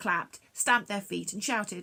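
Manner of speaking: plain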